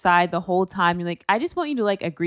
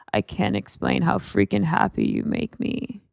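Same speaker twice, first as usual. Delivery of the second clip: creaky, heavy vocal fry throughout. Quoting what he said, imitating Mason's vocal fry. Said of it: "Mason's voice, ... vocal fry".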